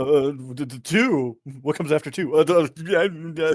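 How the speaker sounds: mock confused stammering, feigned uncertainty. Asked why he acted like he didn't know what came after two, mock confused stammering. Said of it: "make it sound like you didn't know what came after two".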